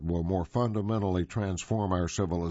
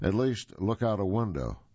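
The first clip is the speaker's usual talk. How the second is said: plain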